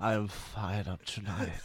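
slow, drawn-out, dark, bad regent voice. Repeating a line on request in a put-on voice: Matthew Kelly by way of Vincent Price. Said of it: "it's like Matthew Kelly by way of Vincent Price".

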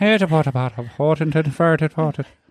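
put-on Irish accent. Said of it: "It's kinda like that".

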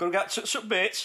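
put-on Yorkshire accent, pitched way up. Trying for a Somerset accent that comes out sounding Yorkshire, Yorkshire accent. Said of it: "That's like Yorkshire, now".

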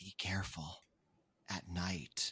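very quiet, slow, drawn-out hushed whisper. Voicing a caretaker who leans in close to a player: whispering caretaker. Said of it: "leans in and whispers".

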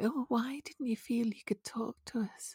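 very slow, high, dragged-out, contempt-laced, concerned tone. Imitating Ruth asking why no one felt they could talk: Ruth impersonation. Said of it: "I absolutely adore your Ruth impersonation".

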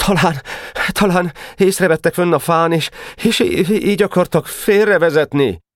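stammering with great difficulty, very high-pitched. Narrator reads a character answering an accusation of lying, stammering with difficulty. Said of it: "nagy nehezen dadogott valamit Geréb".

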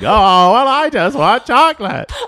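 put-on very high, shrill, booming, loud elderly woman voice. Acting out an old person who wants chocolate: old Kathleen voice. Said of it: "I love how old Kathleen sounds".

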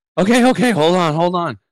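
put-on, very high, huffing and puffing. Retelling a running partner stopping on switchbacks: imitating someone out of breath. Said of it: "he's doubled over and he's huffing and puffing".

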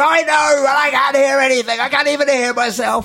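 acted-out shout. Retelling what the other speaker said when he could not hear: imitating someone shouting. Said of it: "Dude, you're shouting".

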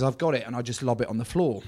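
ordinary talk

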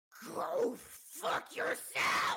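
super loud shout. Voicing a character who curses at another: super loud shout. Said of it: "that was super loud".

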